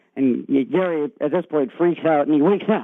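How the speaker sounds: normal talking voice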